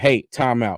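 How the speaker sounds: normal talking voice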